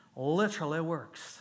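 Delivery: put-on Georgia accent. Speaker retelling what Clyde said, imitating Clyde, Georgia accent. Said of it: "That's my Georgia accent".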